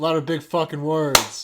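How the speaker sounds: very loud, emphatic, forceful delivery. Repeating the jab after being told to speak up: said louder on request. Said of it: "Speak up".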